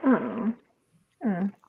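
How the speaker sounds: soft, unenthusiastic oh. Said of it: "That sounded so unenthusiastic".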